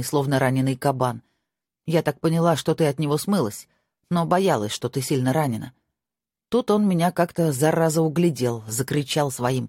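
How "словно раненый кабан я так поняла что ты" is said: plain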